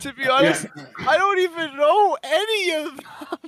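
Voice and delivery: in-character crying. Playing a still-crying character admitting he barely knows the others: in-character crying. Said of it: "still crying".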